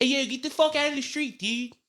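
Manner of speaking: Baltimore accent with very high-pitched voice. Naming the accent as Baltimore, show how it sounds in a Baltimore accent. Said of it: "it's a Baltimore accent".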